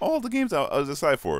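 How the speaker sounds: very high voice cracking mid-phrase. Telling viewers about the games he was excited for, voice cracking. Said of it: "My voice cracked up".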